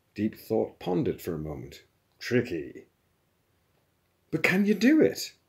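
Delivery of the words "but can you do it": very high cried-out outcry. After a long pause, a questioner presses for an answer; crying out. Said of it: "cried Lin Kuo".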